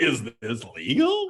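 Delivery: talking like a cartoon dog. Asked to repeat the question in that voice, he uses his Scooby-Doo voice. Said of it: "my cartoon, my Scooby Doo voice".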